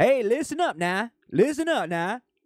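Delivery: put-on crowd-rousing casual drawl. Mocking a politician who changes his voice for a crowd: Obama's put-on crowd voice. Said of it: "all of a sudden he's".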